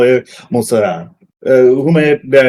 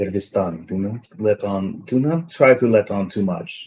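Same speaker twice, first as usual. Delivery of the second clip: secretive, hushed half-whisper; 4 semitones lower, 9 dB quieter than usual. Half-whispering in character into a companion's ear as he walks past: half-whispering in his ear. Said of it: "whisper in his ear".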